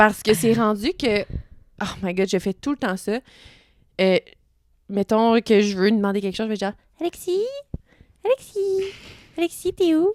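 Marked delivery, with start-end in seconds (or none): 7.0-10.1 put-on very high, slow, drawn-out babyish baby talk. Telling how they call to their partner at home, the speaker uses a baby talk voice. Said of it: "quand je parle comme un bébé".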